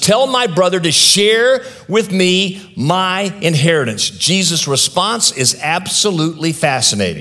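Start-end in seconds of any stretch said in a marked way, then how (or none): 0.0-4.1 put-on angry shout, higher pitch. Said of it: "So he yells out at Jesus".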